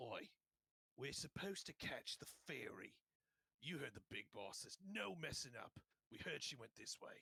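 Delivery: bossy, domineering gang boss voice. The boss of a goon group, overheard talking to his gang; goon boss voice. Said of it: "you can hear you can see like one kind of sticks out as the boss of this group here, / You can just slightly overhear him saying".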